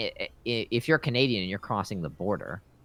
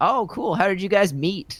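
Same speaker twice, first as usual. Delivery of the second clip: very high, loud, chummy, friendly tone; 11 semitones higher, 6 dB louder than usual. Retelling a border officer's questions on the way back: imitating a friendly officer. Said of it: "really very friendly about it".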